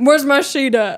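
mock just-woken, groggy, drowsy, confused tone. Imitating Cash half asleep, missing his sheet: imitating Cash half asleep. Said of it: "this is Cash when he's half asleep".

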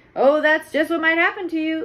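humorless, slightly high-pitched. A man answers a woman defending her plan, without a trace of humor. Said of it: "without a trace of humor in his voice".

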